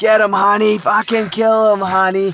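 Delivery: very high, shrill screaming, acted out. Recounting a mother at her son's game yelling to him, imitating a woman screaming. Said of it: "she's screaming".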